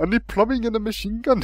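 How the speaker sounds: put-on Syrian accent. Acting out a caller from Syria phoning a plumber: stereotyped Syrian caller voice. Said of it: "racist voice".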